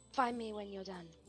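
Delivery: quiet, hushed, soft stage half-whisper. Voicing a character leaning close to half-whisper in someone's ear: put-on half-whisper. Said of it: "whisper in his, like, ear".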